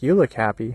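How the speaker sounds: imitated sarcastic voice. Retelling what a tourist said while walking past: imitating a sarcastic tourist.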